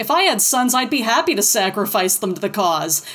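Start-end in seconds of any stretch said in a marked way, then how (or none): none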